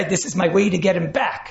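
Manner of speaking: normal talking voice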